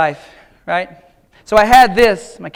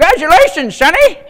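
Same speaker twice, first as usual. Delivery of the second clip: put-on, very high old man voice; 10 semitones higher, 5 dB louder than usual. Imagining himself old at Gibson's graduation, congratulating him in an old man voice. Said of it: "I only have one old man voice".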